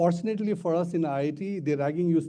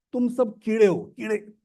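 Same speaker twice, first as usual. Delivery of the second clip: mock, high, nasty, insulting scolding tone; 6 semitones higher than usual. Retelling how a man shouted at the group in Hindi, imitating a nasty shout. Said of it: "he shouts at us and says".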